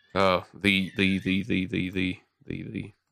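repeated 'the' stutter. On a call-in show after a caller says goodbye, stuttering. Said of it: "are you stuttering?".

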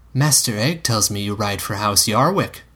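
ordinary delivery

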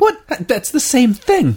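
put-on high stuffy robotic voice. Responding to teasing about a claimed British accent, almost C-3PO voice. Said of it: "you almost went C-3PO there".

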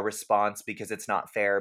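ordinary delivery

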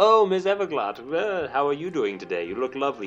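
owl-like hooting voice. Acting out a film character practicing his lines, talking like an owl. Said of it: "He's talking like an owl".

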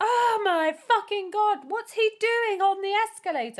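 explosive, shrill, very loud and high shout. Retelling a film scene in which Jason Lee shouts: imitating Jason Lee shouting. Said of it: "And he shouts".

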